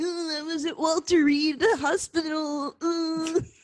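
slow, unhurried, drawn-out put-on caricature voice. Doing a joke impression of Lucas: impression of Lucas. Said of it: "Here's my impression of Lucas".

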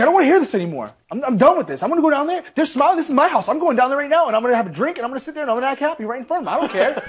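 heated, fed-up tirade. Retelling a houseguest's rant to the others, imitating someone getting angry. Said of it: "he was getting pissed".

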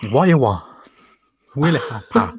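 put-on Chinese advert voice. Copying what another speaker just did, in a Chinese advert voice. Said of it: "Basically what Richard just did".

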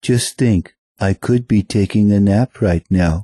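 cartoon cat character voice. Joking about a demo tape while posing as Garfield: Garfield impression. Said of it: "This is Garfield".

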